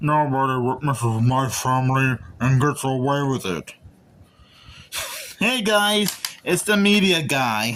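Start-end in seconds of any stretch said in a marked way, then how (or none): 0.0-3.7 deliberately terrible, deep, low put-on celebrity voice. Opening a video review with a terrible Sylvester Stallone impression. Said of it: "my terrible Sylvester Stallone impression".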